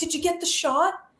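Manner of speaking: bubbly, keyed-up, eager, excited tone. Retelling what a bloodied wrestler asked backstage: imitating an excited wrestler. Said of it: "so excited".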